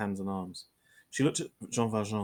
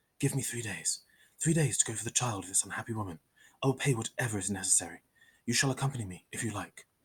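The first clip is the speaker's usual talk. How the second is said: hurried, rapid words in a very low tone. Reading a novel aloud, a prisoner pleads privately with an inspector: rapid, very low tone. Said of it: "said rapidly and in a very low tone".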